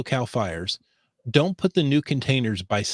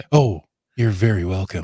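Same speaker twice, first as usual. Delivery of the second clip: deep, raised public radio announcer delivery; 5 semitones lower, 5 dB louder than usual. Replying to thanks on an after show, NPR voice. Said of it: "I've somehow broke into my N P R voice".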